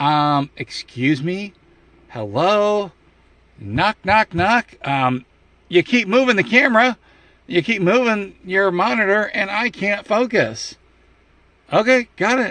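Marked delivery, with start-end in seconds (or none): 0.0-10.8 small, high voice of a tiny man. Imagining a little guy inside the monitor speaking up: voicing a little guy inside the monitor. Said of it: "is gonna be this little guy going".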